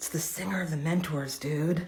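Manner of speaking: soft, hushed half-whisper, close up. Retelling a punk telling you who the big man is: retelling a half-whisper. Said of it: "one of the punks whispered in my ear".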